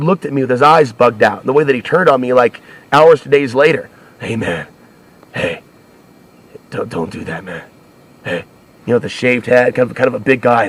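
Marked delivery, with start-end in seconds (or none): 4.2-8.4 completely psycho, hushed near-whisper. Retelling how a man turned on him, imitating his psycho tone. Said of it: "the way that he said it was completely psycho".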